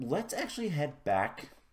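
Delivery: voice cracking. Suggesting heading back to the base: voice cracking. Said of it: "as my voice cracks".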